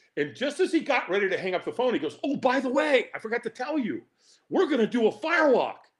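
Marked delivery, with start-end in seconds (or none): 2.3-5.8 put-on eager, excited, bright, pitched-up enthusiasm. Retelling how a buddy announced a firewalk: imitating Dan's enthusiastic tone. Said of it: "he said it with this enthusiasm".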